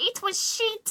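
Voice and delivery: put-on witch voice, very high. Trying the line in a different accent: Baba Yaga voice. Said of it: "That was Baba Yaga".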